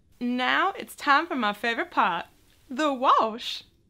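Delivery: silly, loud, drawn-out funny put-on voice. Announcing the next step of painting figures: funny voice. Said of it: "I'm doing those with funny voices".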